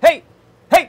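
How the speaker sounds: shrill, high, loud shouting. Testing a microphone setup, the speaker yells into the mic: yelling. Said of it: "I'll be yelling".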